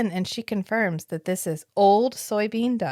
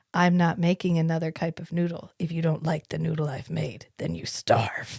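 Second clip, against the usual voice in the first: put-on stern vampire voice, pitched lower; 5 semitones lower, 3 dB quieter than usual. Retelling refusing to make more noodles: imitating LaCroix. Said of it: "channeling my inner LaCroix that I had to channel".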